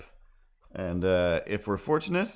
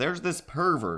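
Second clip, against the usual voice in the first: higher, fake-offended, put-on outraged voice; 7 semitones higher than usual. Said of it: "That's how I'm talking for this video".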